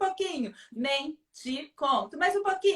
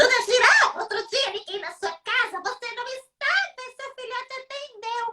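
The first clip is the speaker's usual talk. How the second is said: piercing, screechy, very high hyena voice; 10 semitones higher, 4 dB louder than usual. A storyteller voices the hyena speaking to the giraffe: shrill hyena voice. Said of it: "com uma voz estridente".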